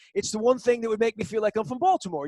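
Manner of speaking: bad British accent, rattled off quickly. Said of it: "He had said to me in his British accent".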